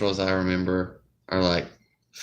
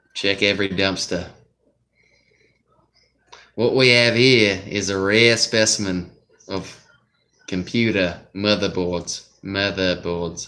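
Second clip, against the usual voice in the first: put-on Australian accent; 3 dB louder than usual. Joking about finding computer motherboards: put-on Australian accent. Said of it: "with an Australian accent".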